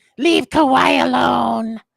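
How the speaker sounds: put-on rough, creaky voice. Retelling someone taking the mic at basketball, speaker uses Matt Lerma voice. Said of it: "in my Le- Matt Lerma voice".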